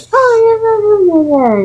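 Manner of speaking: high, swooping jeering taunt, "oh" drawn out. Retelling how others mock the speaker whenever they talk, in a mocking high-pitched voice. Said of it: "mocked with them saying high pitched voice".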